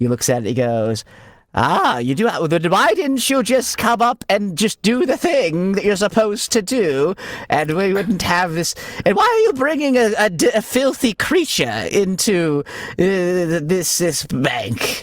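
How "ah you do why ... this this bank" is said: indignant put-on voice, higher and slower. A bank vault clerk scolds visitors who bring a keystone, indignant bank clerk voice. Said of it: "Let's dial it back there".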